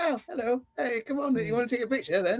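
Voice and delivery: friendly, easygoing, warm, pal-like voice. Retelling meeting John Noble, who was unexpectedly friendly. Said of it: "He's so friendly".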